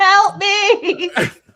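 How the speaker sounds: high, wailing, tearful, sobbing scream. Inquisitors stare and cry witch at your wounded character, screaming and crying. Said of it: "screaming and crying, going".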